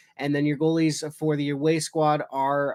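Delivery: ordinary delivery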